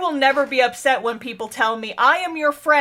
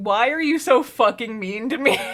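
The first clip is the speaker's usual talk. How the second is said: mock whiny voice on the verge of crying. Retelling a character's plea while choking someone: imitating someone almost crying. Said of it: "almost crying and being like".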